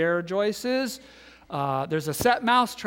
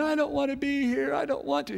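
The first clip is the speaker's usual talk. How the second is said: put-on shrill, ragged, rough screaming, very high-pitched; 10 semitones higher than usual. Retelling how the daughter reacted when brought back down, imitating the daughter screaming. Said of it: "she starts screaming".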